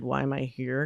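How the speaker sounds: low voice, bored and irritated, put out. Showing how you would mimic your podcast co-host, imitating Molly, bored and irritated. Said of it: "more of a bored, like irritated".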